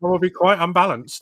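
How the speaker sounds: high, loud, pompous mock politician voice.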